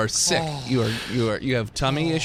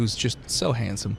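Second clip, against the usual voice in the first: normal talking voice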